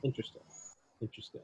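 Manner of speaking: hushed, soft, soothing therapist-style whisper. Describing a talk that felt like therapy, imitating his soothing voice. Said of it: "he has a very soothing voice".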